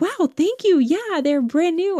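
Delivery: cheery, delighted voice lifted way up high.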